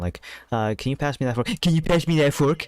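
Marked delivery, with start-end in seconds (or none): 1.6-2.7 mocking tone, pitched up. Describing a creature that copies people, the speaker demonstrates its speech in a mocking tone. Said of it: "it would speak in a mocking tone".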